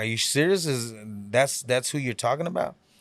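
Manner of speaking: ordinary delivery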